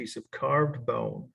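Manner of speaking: slow, deliberate, carefully spaced dictation pace. Correcting a note so listeners can write it down: said slowly. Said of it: "so I'll say this slowly".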